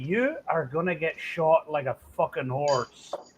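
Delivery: put-on heavy, thick Belfast accent laid on. Repeating on request how she would say it, in a thick Belfast brogue. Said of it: "with a thick Belfast brogue".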